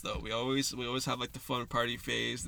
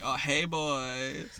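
playful, giggly flirty tone

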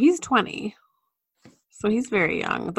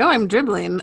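normal talking voice

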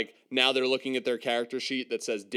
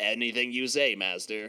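normal talking voice

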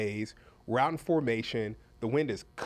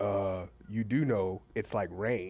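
put-on deep baritone voice, lower; 5 semitones lower than usual. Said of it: "Eddie had this deep baritone voice".

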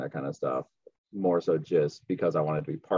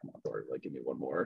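muttered under the breath, much quieter and faster; 3 semitones lower, 10 dB quieter than usual. Speaker recalling pushing for one more rep while struggling, muttered under breath. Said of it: "just like under my breath".

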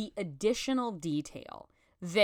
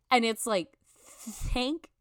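ordinary talk, nothing marked

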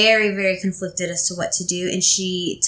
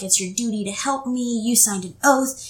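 mock scream, higher pitch; 3 semitones higher than usual. Retelling a scene where a character begs for help: imitating someone screaming.

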